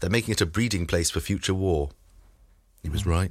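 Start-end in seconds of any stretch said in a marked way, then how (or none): none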